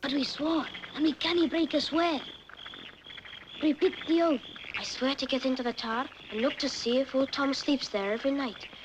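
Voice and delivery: put-on speaking with a Scottish accent. A film character leads others in an oath: scottish accent. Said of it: "Now that's a Scottish accent".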